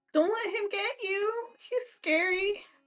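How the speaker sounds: tearful, very high-pitched crying voice. A game master voices an upset woman pleading with a player, tearful pleading. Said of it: "She's got the tears streaming".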